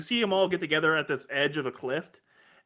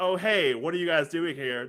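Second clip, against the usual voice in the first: put-on Australian voice putting on an American accent. Retelling a scene where a disguised security guard greets the heroes, Ivan's fake American accent. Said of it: "like trying to hide it with an American accent".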